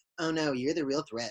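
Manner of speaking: smug, superior, condescending and dismissive tone. Retelling how the characters dismissed a serious warning: imitating a smug, superior attitude. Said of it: "that whole attitude they had, that smug, superior attitude".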